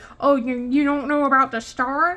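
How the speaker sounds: put-on geeky nerd voice. Complaining that people mispronounce the cat's name Rigel, in a put-on nerdy voice. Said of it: "sorry, that was my nerdy voice".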